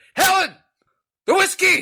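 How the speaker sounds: mock very high, loud hollered line. Speaker describing how their uncle talks to his wife, imitating Uncle Ronnie talking loud. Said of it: "He's like loud like that".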